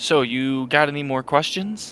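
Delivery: slow, high-pitched, very calm voice. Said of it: "very calmly be like".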